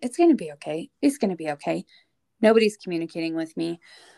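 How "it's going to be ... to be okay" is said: put-on dazed, repetitive film-character voice. Retelling how someone beside her kept repeating to himself, Rain Man impression, dazed repeating. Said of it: "repeating to himself like Rain Man".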